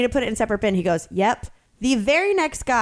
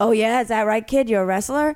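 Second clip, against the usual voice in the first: quick, rough voice. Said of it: "I hear this raspy voice go".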